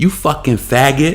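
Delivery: effeminate, feminine man's voice. Retelling what one dude said to the other boy, imitating a man's feminine voice. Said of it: "in his feminine voice".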